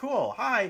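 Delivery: high, loud, cheery, surprised voice.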